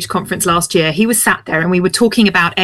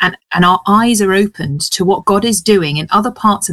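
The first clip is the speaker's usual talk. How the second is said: ordinary talk, nothing marked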